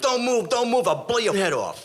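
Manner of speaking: acted yelling, very high and hard. Retelling running up on a guy, acting out yelling at him. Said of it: "I'm yelling at him".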